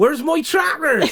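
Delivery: very high, very loud, husky West Country farmer voice. Delivering the punchline of a farmer joke, West Country farmer voice. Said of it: "I think the voice helped".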